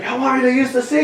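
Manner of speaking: high, laughing, taunting wrestler voice.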